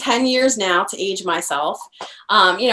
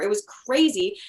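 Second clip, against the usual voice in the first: plain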